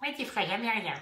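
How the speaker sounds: small, tiny, high put-on clown voice. Showing how to imagine a tiny clown-costumed critic speaking: tiny little voice. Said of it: "une petite voix".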